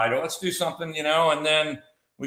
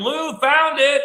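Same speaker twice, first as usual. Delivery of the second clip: put-on shrill, carrying, very high, loud shout; 11 semitones higher, 6 dB louder than usual. Retelling how she shouted during their search, imitating her yelling. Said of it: "she's yelling like".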